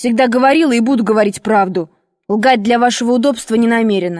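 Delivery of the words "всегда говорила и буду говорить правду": ordinary delivery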